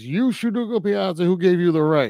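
full-on, high-pitched screaming. Retelling a scene where a man screams after Ugo Piazza is shot, imitating a screaming man. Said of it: "And he goes".

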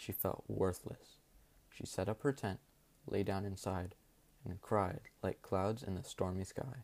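plain reading voice

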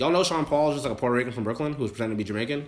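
ordinary delivery

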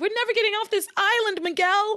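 mock yelling, high, voice climbing as it goes. Retelling a plot scene where a character yells: imitating someone yelling. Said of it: "and she's yelling".

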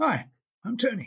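put-on very high-pitched voice with a faint Welsh accent. Retelling meeting Anthony Hopkins on a film set: Anthony Hopkins's slightly Welsh voice. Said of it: "In his slightly Welsh voice that he has".

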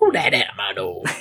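acted sinister villain voice. Recapping a film scene, the speaker imagines how the killer would sound: Leatherface voice. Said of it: "I definitely imagine that's the sort of voice Leatherface would have".

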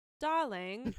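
loud put-on British accent on darling. Retelling a word said with a partner: british accent. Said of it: "I say, like, specific things in British accents".

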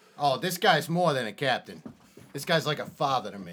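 put-on sudden Brooklyn-style accent. Game master voicing a character vouching for a captain, in a Brooklyn-style accent. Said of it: "this universe's equivalent of Brooklyn".

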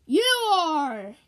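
high, very loud, ghostly holler. A voice from around the corner grabs the girl, hollering. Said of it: "the voice hollered".

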